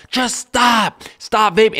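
mock harsh, blunt, high, drawn-out yell. Speaker describes how they yell at people online, retelling own yelling. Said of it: "I'm yelling at them".

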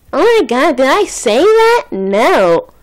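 high, swooping, very slow sing-song with stretched "no". Repeating the other speaker's words right back: impression of the other speaker. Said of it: "I did a good impression".

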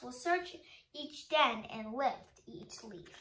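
ordinary talk

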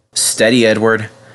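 ordinary talk

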